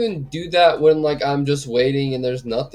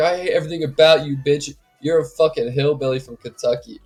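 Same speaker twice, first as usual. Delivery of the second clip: put-on imitated man's voice. Imagining a fight where he roasts her: imitating a man roasting someone. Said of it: "he's like".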